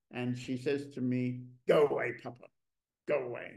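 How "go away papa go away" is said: mock cross voice, angry and dismissive. Retelling a daughter's reply after being interrupted while painting: imitating an angry daughter. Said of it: "she's completely angry that I disturbed her".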